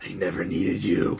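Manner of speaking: very low, sinister, evil villain voice. Retelling what he said into the microphone after knocking down Tyler Bate, in a mock-evil voice. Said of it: "in a very evil sounding voice".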